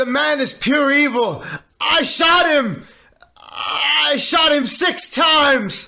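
put-on voice, very high, accidentally Australian-sounding accent. Asked to give your Dr. Loomis impression, you happily oblige: Dr. Loomis impression, Australian-sounding. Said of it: "I didn't know Dr. Loomis was Australian".

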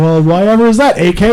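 mock clueless, feigned innocent, playing-dumb tone. Retelling asking about the bathroom graffiti: imitating playing dumb. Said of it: "I'm playing stupid going".

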